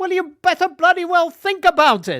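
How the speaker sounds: put-on Welsh accent, shrill, booming, very high, very loud. Retelling his careers master's reply when he was fifteen, imitating a welsh accent. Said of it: "in his Welsh voice".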